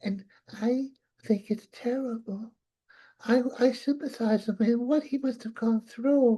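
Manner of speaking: soft, put-on motherly voice. Asked to do the mother next, the speaker answers in the mother's voice. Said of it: "now do do the mother now".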